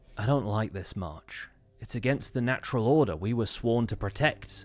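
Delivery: exasperated, frustrated voice with a sigh. Voicing Redmond objecting to the march: voicing Redmond, frustrated. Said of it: "sigh in frustration".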